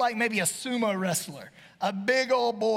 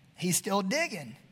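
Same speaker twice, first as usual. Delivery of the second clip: usual speaking voice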